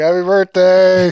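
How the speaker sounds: loud, slow, high-pitched yelling.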